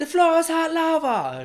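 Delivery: terrible put-on English accent. Imitating english people doing the hot lava challenge, terrible english accent. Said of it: "A terrible accent".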